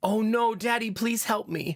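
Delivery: acted frightened, pleading small boy voice. Father retelling his son's plea for help, imitating a scared child. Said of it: "And he sounded very scared".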